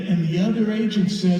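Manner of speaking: ordinary talk, nothing marked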